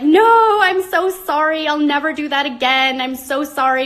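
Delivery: tearful, sobbing, drawn-out, high-pitched crying voice. Retelling pleading after being handed a last paycheck: retelling a tearful apology. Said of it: "I was like crying and I was like".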